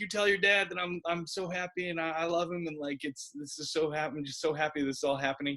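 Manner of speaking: play-acted, teary, weepy crying voice. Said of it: "[name] started crying and was like".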